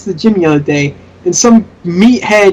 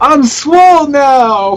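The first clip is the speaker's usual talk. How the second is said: mock high yell, "now" drawn out; 7 semitones higher than usual. Acting out an imagined driver at the window: imitating someone yelling. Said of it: "He's just yelling out the window the entire time".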